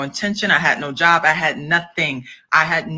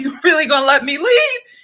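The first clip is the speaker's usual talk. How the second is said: very high-pitched, tearful mock crying; 11 semitones higher, 4 dB louder than usual. Retelling loading the car as the man let her leave: retelling her own crying. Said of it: "and I just start crying".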